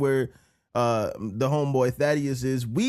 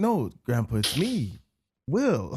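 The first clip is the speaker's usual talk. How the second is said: put-on tender, patient coaxing, very slow; 3 semitones lower than usual. Retelling how a friend spoke, imitating gently talking to slipping grandpa. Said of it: "like, you talking to your grandfather that you know is slipping".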